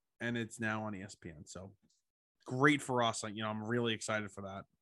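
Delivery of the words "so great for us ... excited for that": heavy sarcasm with feigned excitement. Reacting to news that a game moved to ESPN: sarcastic. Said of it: "That was very, very, very, very, very sarcastic".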